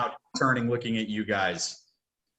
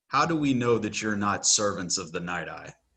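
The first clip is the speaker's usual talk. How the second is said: very stern, severe, demanding tone; 3 semitones lower than usual. Voicing a centaur leader questioning the party: very stern tone. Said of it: "a very stern tone of".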